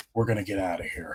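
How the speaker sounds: deep, low, heroic voice. Retelling a cartoon scene where a character speaks: imitating Batman voice. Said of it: "Dude went into Batman voice and said".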